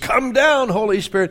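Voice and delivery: loud, high-pitched exclamation. Telling a story, voicing a preacher calling for the Holy Spirit, in a loud exclaiming voice. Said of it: "exclaimed in a loud voice".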